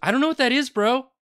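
very high, desperately eager, desperate voice. Retelling how someone answered an offer to play a game on the bus ride, imitating someone desperate. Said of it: "It was so desperate".

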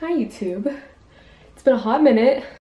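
winded, breathing hard. Youtuber greets viewers right after climbing the steps, out of breath. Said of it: "I'm out of breath".

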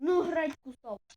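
loud, slow angry yell. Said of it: "Та успокойся".

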